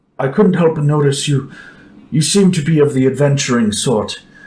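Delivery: shy, meek, slow, timid villager voice. Voicing a timid villager approaching the adventurers: timid villager voice. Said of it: "looks a little timid".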